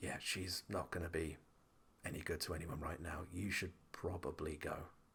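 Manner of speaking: very quiet, barely voiced, leaning-in whisper. Voicing a character who leans over to a player: whispering. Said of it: "bows slightly over to you just so he can whisper and goes".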